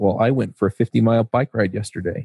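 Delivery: mock-condescending tone. Suggesting what you could tell your neighbors, in a mock-condescending tone. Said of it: "In your most condescending tones".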